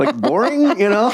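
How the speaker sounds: high, squeaky, giggly mock critic voice.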